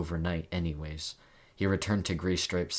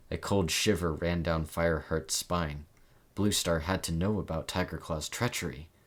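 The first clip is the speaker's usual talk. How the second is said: usual speaking voice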